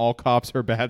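normal talking voice

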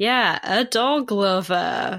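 very slow, drawn-out delivery. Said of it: "leans in and goes".

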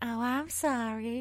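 tiny, small, high little voice. Retelling a spooky encounter, doing her line in a small little voice. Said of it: "her little voice like".

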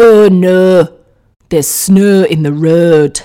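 accent from Hull. A Canadian speaker showing how you'd sound if you're from Hull: put-on Hull accent. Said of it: "sound like you're from Hull".

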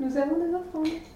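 mild, careful, gentle, understated delivery. Answering a mysterious voice in the role-play game: said very softly. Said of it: "Je le dis très, très doucement".

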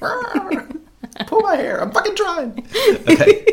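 put-on very high granny dinosaur voice. Playing a short-armed T-rex straining to reach: T-rex sounding like a grandmother. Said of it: "I don't know why my T Rex sounds like a grandmother".

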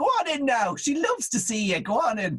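high Irish Cork mammy voice. Retelling how the speaker's mother would send them in, cork mammy voice. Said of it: "every mammy voice".

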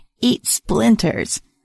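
rasping, crackling voice. Reading a story where an unseen creature shouts from the woods: raspy, crackly voice. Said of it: "A raspy, crackly voice called out".

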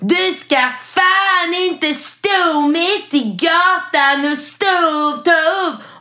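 thickest Skåne dialect, very high, slow, drawn-out yell. Retelling what a man shouted at the speaker from his window, broad Scanian accent. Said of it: "på den bretaste skånskan".

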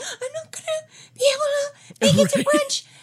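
mock distressed voice. Acting out cancelling brunch on the phone: mock distressed voice. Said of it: "if you called me like that".

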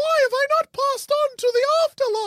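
very high-pitched cartoon ghost character voice. In a comedy bit, voicing the ghost who won't leave him alone, in a ghost cast voice. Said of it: "That's my cast voice".

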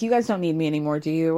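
clearly hurt and upset voice. Retelling what Isabel said to her parents: imitating someone upset. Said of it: "Isabel is clearly upset".

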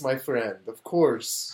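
speaking with Armenian accent. Asked what an Armenian sounds like, demonstrating with an Armenian accent. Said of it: "Armenians sound like this".

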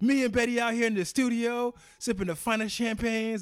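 shrill, booming, very loud, high bragging voice. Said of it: "a little [name] voice".

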